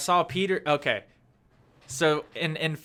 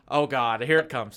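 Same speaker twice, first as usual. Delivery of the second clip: ordinary delivery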